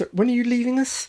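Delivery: very high, fast, sincere, earnest interviewer voice. Asked to read the first bit aloud: earnest interviewer voice. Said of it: "In your most earnest interviewer's voice".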